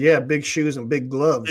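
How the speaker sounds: usual speaking voice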